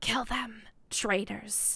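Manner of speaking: eerie, unnerving voice. Voicing the inner voice that a warlock hears, in an unnerving voice. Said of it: "Voice is very unnerving sometimes".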